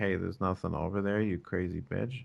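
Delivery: acted whisper. Imagining one woman whispering into another's ear: acting out a whisper. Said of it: "whispered in her ear".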